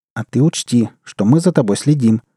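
usual speaking voice

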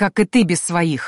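muttered and hissed through clenched teeth. Mid-fight with a bandit, a witcher speaks through gritted teeth. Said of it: "процедил Карл".

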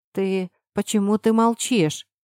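plain reading voice

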